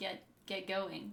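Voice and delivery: put-on impatient, urging voice. Acting out being read to too slowly: acting out impatience.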